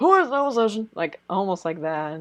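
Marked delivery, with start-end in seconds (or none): 0.0-0.9 put-on elderly man voice, raised pitch. Imitating how the anime makes the judge sound: imitating an old man voice. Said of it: "they make the judge sound like such an old man".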